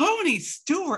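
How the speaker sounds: high-pitched, drawn-out, shocked yell.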